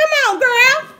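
thrilled, excited, very high, very loud shout. Opening a package on camera, excited yelling. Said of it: "sorry, it's me yelling".

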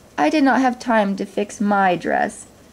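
plain reading voice

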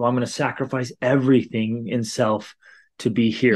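ordinary delivery

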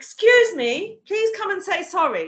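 loud, high, stern call. Recounting when young people knocked over a frail woman: retelling a raised voice. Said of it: "this voice came out of me".

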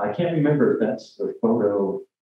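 ordinary talk

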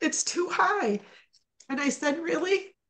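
high, tearful, crying through the words. Recounting a conversation with a doctor, crying while speaking. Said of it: "I'm sorry I'm crying".

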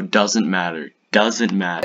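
plain

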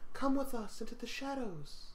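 soft, hushed, ominous beckoning call. As someone plunges into darkness, the players hear Sarah calling: Sarah's ominous voice. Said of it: "You hear Sarah's voice ominously calling out".

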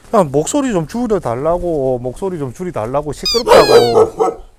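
scolding, loud and drawn out.

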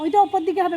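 loud shout carrying across distance.

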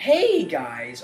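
voice cracking. Greeting viewers at the start of a video: voice cracking. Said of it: "voice crack".

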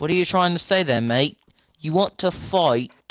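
mock put-on British accent. Bickering with another player, speaking in a put-on British accent. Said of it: "What is it with us and British accents?".

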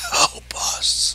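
faint, soft, barely audible whisper. Narrating a game scene where a dragon turns and speaks, in a faint whisper. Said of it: "in a faint whisper says".

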